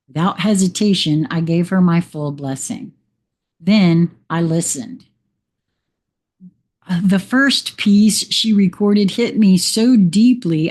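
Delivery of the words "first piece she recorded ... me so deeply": ordinary talk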